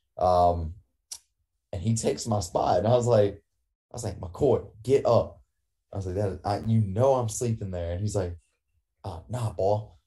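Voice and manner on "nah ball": weird put-on Cajun accent, higher pitched. Speaker retells McCoy taking their spot and refusing to move, in McCoy's weird Cajun accent. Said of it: "he does this weird Cajun accent on purpose".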